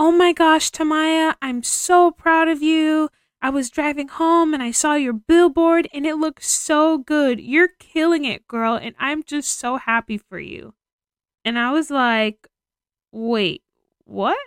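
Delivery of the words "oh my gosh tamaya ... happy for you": acted-out high, thrilled, excited shouting. Speaker acts out a video message from a friend, retelling her excited shouting. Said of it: "she's just shouting like".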